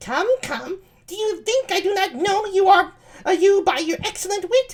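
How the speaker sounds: put-on voice pushed as high as it goes. Reading a play aloud, voicing Ursula to Antonio: high-pitched Ursula voice. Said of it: "I really high-pitched voice".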